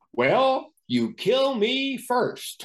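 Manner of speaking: put-on loud, high, slow. Retelling a joke said loudly at a crowded airport gate: retelling saying it loudly. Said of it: "I said in a loud voice".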